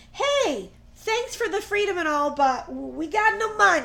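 put-on light Italian accent. Speaker retells what the newly freed people said, in a slight Italian accent. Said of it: "you sounded a little Italian".

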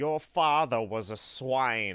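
slow, high-pitched loud yelling. Retelling how Snape speaks to Harry: imitating Snape yelling. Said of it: "Snape, like, yells at Harry".

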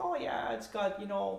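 high, slow, nonchalant, tossed-off tone.

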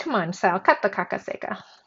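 ordinary delivery

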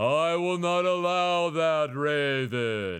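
god-like voice, "raven" dragged out. Imagining being a god, the speaker forbids the raven: Wizard of Oz voice. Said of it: "you sound like the wizard of Oz".

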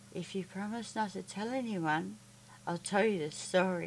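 speaking very softly, barely above a hush. Reading a man speaking to a little girl behind a shut door, very soft voice. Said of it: "He spoke in a very soft voice".

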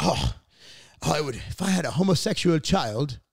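horrible put-on British accent. Retelling what people eating fish and chips said, in a horrible british accent. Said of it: "that's a horrible accent".

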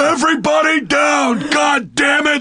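loud bellowing voice.

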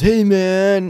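very loud, high, shrill frat-bro holler. Describing bro-y guys heard between sets; bro impersonation. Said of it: "you do a good bro impersonation".

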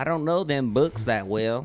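very bad, classic put-on Southern accent. Retelling a man's lines about learning engines in a very bad Southern accent. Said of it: "very bad Southern accent".

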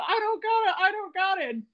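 very high, shrieking scream. Retelling a moment when you screamed at Logan: retelling screaming at Logan. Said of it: "I'm like screaming at Logan".

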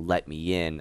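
low, flat deadpan delivery. Recalling the Fiend's line from the Firefly Funhouse: deadpan Fiend voice. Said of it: "the whole deadpan, like".

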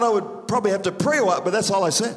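ordinary delivery

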